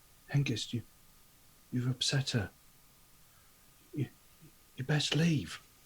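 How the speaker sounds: very quiet hushed voice. Speaker voicing Gulliver so that Hengist can hear, quiet voice. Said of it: "in a very sort of like quiet voice".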